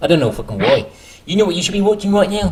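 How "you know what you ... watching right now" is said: put-on New Zealand accent, pitched up. On a podcast, speaking in a put-on new zealand accent. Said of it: "I'm doing it in a New Zealand accent, bro".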